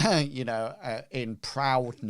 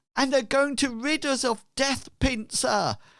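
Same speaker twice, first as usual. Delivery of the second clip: very high, rallying shouted call; 13 semitones higher, 5 dB louder than usual. Molly Squaresail joins the discussion and shouts out to the crowd. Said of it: "she shouts out".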